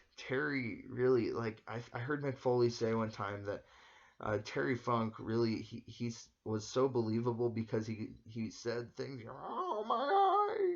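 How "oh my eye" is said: badly done, high, loud wail. Imitating a wrestler begging for mercy: worst Terry Funk impression. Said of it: "that's the worst Terry Funk impression ever".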